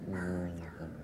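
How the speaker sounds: hushed, breath-only, soft half-whisper. Showing the class how to half-whisper an old word: half-whispering. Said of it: "I'd like you to whisper the word".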